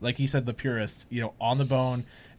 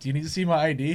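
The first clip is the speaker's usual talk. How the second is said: put-on serious tone, higher in pitch; 4 semitones higher than usual. Retelling a friend asking a waitress for ID: imitating Trevor asking seriously. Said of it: "legitimately serious".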